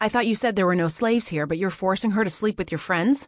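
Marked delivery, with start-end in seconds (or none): none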